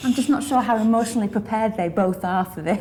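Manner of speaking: speaking through laughter. Describing an actors' first run of a scene, laughing.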